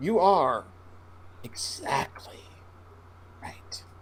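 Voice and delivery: slowed-down whispered delivery. Repeating a phrase after being asked to say it slower. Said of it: "Can you say it slower?".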